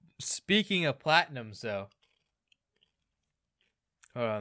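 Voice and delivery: speaking mid-chew, mouth full. Pausing mid-conversation to finish chewing an M and M, talking while chewing. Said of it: "let me finish chewing this M and M".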